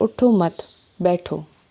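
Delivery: pause after "utho mat" before "baitho". Urdu phrasing example, pause after utho mat. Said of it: "अब उठो मत के बाद हम रुक गए हैं".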